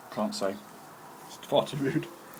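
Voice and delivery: speaking with mouth full. Asked for his thoughts, he answers while speaking with a full mouth. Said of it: "he's just got a mouthful of Pringles".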